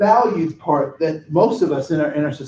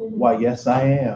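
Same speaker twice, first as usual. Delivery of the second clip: low, put-on attempt at an American accent; 4 semitones lower than usual. Speaker retells answering a man who asks if he is Idris Elba; best American accent. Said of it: "in my best American accent".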